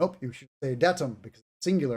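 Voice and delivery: ordinary talk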